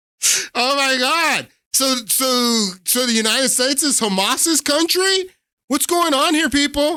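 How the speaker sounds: high, incredulous outrage.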